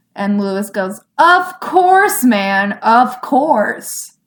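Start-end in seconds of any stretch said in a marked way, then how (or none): 1.2-4.1 sarcastic delivery. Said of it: "Was that sarcastic?".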